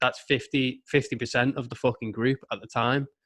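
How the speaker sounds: ordinary delivery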